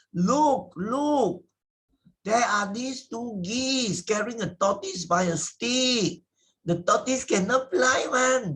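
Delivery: mock children exclaiming very loudly, high and excited. Telling the tortoise fable, the narrator voices village children shouting very loudly. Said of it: "So they shouted very, very loudly".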